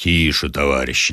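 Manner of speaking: low, authoritative, commanding tone. A French grenadier tells a fellow soldier to be quiet, in a commanding voice. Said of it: "сказал повелительным голосом".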